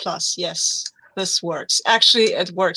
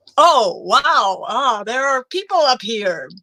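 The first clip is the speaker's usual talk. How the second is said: put-on American accent, pitched high; 5 semitones higher than usual. Describing what he'd do facing thugs on a roof: put-on American accent. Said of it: "in an American accent".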